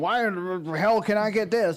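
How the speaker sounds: ordinary talk, nothing marked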